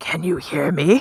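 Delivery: low whisper. Voicing a character testing a message rock through a door: whispering. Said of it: "whispers into the rock".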